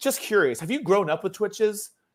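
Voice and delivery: patronizing, condescending, talking-down tone. Retelling Kevin's question at the roundtable, imitating Kevin's condescending tone. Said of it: "it sounds so, like, condescending".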